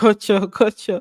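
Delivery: ordinary delivery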